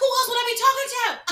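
high, loud, exasperated shouting.

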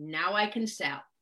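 low, slow mutter under the breath. Retelling a remark made at a club meeting: imitating muttering under breath. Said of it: "under my breath".

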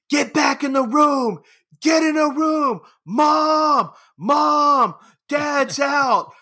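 put-on, very high, drawn-out children's shrieking. Retelling how the two youngest kids yelled when dad came out: imitating kids screaming. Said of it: "my two youngest would scream".

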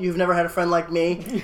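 ordinary talk

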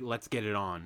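ordinary talk, nothing marked

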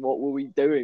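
mock military-style delivery. Retelling what an officer asked the boys, imitating a military-style question. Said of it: "in, like, a military way".

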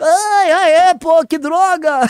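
high, slow moan. Speaker retells a politician's hospitalization: Bolsonaro impression, mock moaning in pain. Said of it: "eu tô imitando a voz do Bolsonaro".

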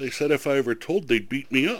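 meek, soft, sheepish tone. Retelling a man's answer to the speaker's mother, imitating a sheepish voice. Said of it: "in the most sheepish voice".

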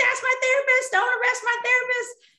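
play-acted, shrill, very high-pitched screaming voice. A therapist recalls a client coming out during a SWAT arrest; reenacting a client screaming. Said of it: "she's screaming".

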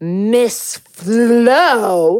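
put-on condescending tone. Retelling how she addressed Florence: imitating a condescending tone. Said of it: "in this most condescending".

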